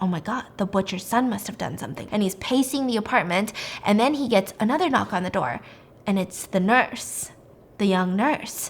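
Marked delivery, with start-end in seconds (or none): 0.0-2.1 mock panicked voice, lower and quieter. Retelling a story where he panics after the police leave: imitating someone freaking out. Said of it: "he's freaking the fork out".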